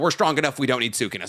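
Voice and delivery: ordinary talk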